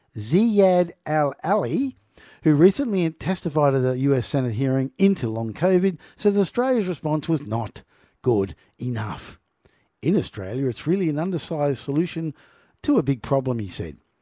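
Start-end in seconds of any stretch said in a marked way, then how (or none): 0.1-1.9 very slow, deliberate, careful enunciation. A presenter introduces an epidemiologist by name, saying the name slowly. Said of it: "I'm going to say this slowly".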